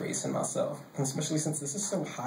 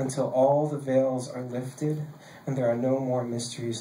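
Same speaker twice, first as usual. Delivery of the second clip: ordinary talk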